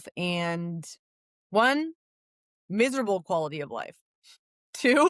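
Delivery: chuckling, laughing through the words mid-sentence. Speaker laughing at a habit they used to have; laughing while talking. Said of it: "I'm not laughing because this was me".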